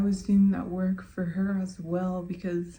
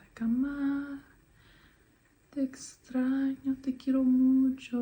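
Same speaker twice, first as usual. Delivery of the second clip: put-on sobbing and crying, pitched higher; 6 semitones higher than usual. Retelling what a crying girl said to her mom: imitating someone crying. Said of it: "bawling her eyes out".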